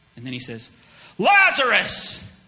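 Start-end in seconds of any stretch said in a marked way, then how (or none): 1.2-2.2 startling, very loud, high-pitched full-volume shout. Retelling how Jesus called into the tomb: shouting Lazarus's name. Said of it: "Did that scare you?".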